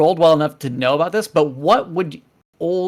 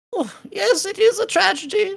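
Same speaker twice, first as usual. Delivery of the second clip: very high, squeaky gnome voice. Game master voicing the gnome scholar asked about Mister Cinder: squeaky Barnaby Bubblekin voice. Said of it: "the gnome squeaks up".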